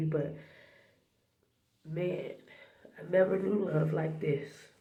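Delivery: weeping while talking, tearful voice. Sharing a message with listeners from the bathroom, crying while speaking. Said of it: "I'm sorry that I'm crying like a big baby".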